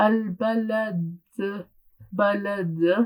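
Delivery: qalqala wrongly slowed and drawn out. Showing the mistake that learners make: slow, drawn-out qalqala. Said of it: "they'll apply it very slowly".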